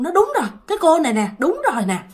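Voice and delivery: excited, quick high-pitched voice.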